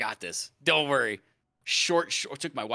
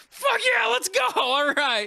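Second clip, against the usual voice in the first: shrill, very high, loud screaming; 7 dB louder than usual. Recalling coming back on camera, the speaker acts out what he shouted: retelling own screaming. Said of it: "Just screaming at everybody".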